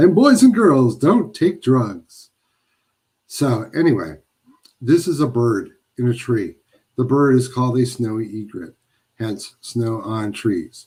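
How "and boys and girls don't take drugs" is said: pitched-up public service announcer voice. Host describing a print giveaway slips into a mock public service announcer voice. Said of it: "Why am I sounding like a public service announcer?".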